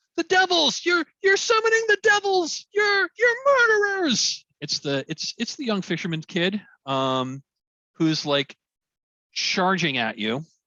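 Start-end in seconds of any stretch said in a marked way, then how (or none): 0.2-4.5 very high-pitched, loud screaming. Voicing a young fisherman screaming at the group during their ritual: screaming young man. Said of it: "you hear a voice scream behind you".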